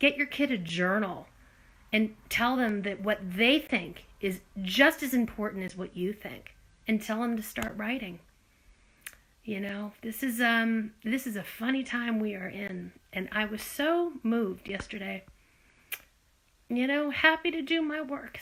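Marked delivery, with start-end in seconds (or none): 10.0-18.4 voice breaking with tears, choked-up and crying. Speaking to listeners, moved to tears, crying. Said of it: "Sorry to cry".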